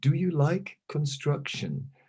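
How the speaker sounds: put-on very sweet, honeyed, high, sing-song voice. Retelling what a man said to the speaker, mimicking his very sweet voice. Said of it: "he goes with a very sweet voice".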